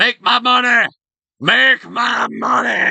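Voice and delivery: put-on very high, crazed, deranged old man voice. During a game session, voicing a character as a deranged old man. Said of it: "Sound like a deranged old man".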